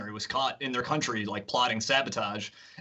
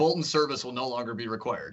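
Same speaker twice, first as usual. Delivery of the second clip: ordinary talk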